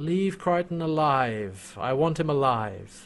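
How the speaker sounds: quiet, calm, even, slow and drawn out. Retelling Scorpius ordering the soldiers: imitating Scorpius's quiet calm voice. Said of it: "his quiet, calm self".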